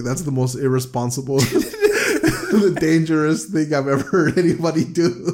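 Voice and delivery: laughing in disbelief. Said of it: "Freya responds like".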